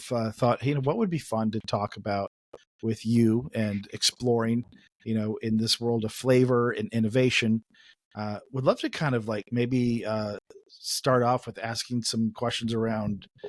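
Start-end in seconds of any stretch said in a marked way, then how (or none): none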